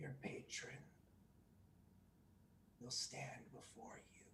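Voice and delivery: put-on raspy, creaking whisper like old leather. A leather-bound book speaks its words before slamming closed: raspy, like creaking leather. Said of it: "in a raspy voice, like the creaking".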